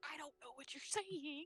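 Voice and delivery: spoken in a whisper. Answering a creature speaking Sylvan, shrugging: whispering. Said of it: "shrug and just whisper back".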